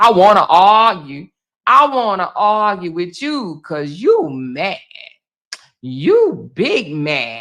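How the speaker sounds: sneering, taunting, angry, itching-for-a-fight tone. Mocking people who want to fight, imitating someone eager to argue: mocking imitation of an angry arguer. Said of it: "for you to tell somebody".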